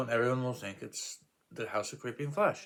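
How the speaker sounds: ordinary delivery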